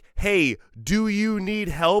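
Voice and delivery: loud, high, drawn-out calling out. Retelling a mid-match offer of help, meant for fans to hear: imitating a loud call. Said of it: "really loud so all the fans can".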